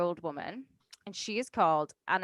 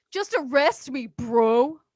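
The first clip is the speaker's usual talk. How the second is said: put-on bro voice, higher and louder; 6 semitones higher, 6 dB louder than usual. Imitating a murder suspect talking to cops: imitating a bro dude. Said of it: "I want him to just be a Kyle bro dude".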